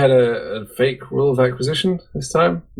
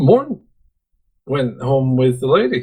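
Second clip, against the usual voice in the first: sounding surprised and taken aback. Explaining a plot twist that suddenly clicked, a speaker sounds surprised. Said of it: "You sound surprised".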